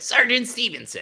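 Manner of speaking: very high voice pushed from the back of throat. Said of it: "back of the throat".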